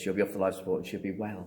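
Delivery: normal talking voice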